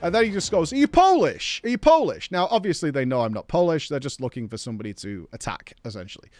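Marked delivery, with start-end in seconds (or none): 0.7-2.3 play-acted aggressive, hostile shout, very high and swooping. Retelling a man from a car shouting at him, imitating his shouting. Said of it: "So he's like shouting at me".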